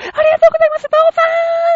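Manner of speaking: shrill, piercing, very high, loud yell. Telling a story about startled horses, acting out the shout that set them off. imitating a high-pitched shout. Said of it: "高い声で言うもんだから".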